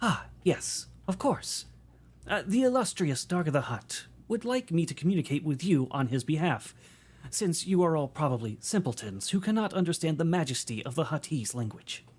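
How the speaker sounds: robot interpreter voice. Voicing a droid that speaks for the Hutt: droid interpreter voice. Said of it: "a droid that waddles over and goes".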